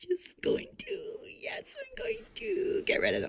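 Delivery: high, soft, excited whisper.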